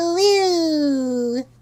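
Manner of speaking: dopey derp voice. Showing off different voices after transitioning; derpy voice. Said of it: "the derpy voice".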